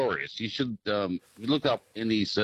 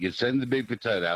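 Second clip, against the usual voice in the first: usual speaking voice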